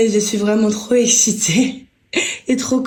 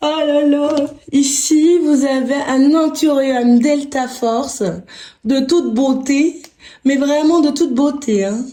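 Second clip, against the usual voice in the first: bizarre, thrilled, overexcited put-on voice; 4 semitones higher than usual. Showing new plants to viewers in a video: weird excited voice. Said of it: "Je vais faire vraiment des voix bizarres".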